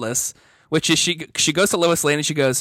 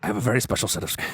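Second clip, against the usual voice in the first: put-on very low action-movie voice, own accent unchanged; 7 semitones lower, 6 dB quieter than usual. Doing a famous movie line after being told it sounded like Liam Neeson: Liam Neeson impression. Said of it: "it is way more Liam Neeson".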